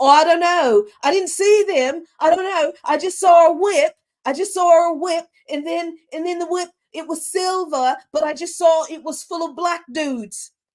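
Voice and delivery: put-on very high, loud young British boy accent. Imitating a boy in the UK interviewed by the news: imitating a British boy's accent. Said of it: "That was a good accent".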